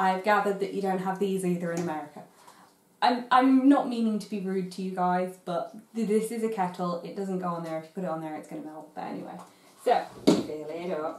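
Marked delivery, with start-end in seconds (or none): none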